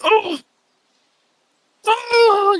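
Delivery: very high, loud, pained screaming. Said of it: "You hear screaming".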